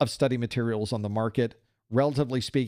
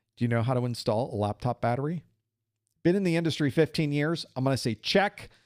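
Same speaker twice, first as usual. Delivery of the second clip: plain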